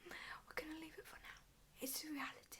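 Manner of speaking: hushed whisper. Talking through a makeup routine on video, introducing the last product, whispering. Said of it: "Don't know why I'm whispering".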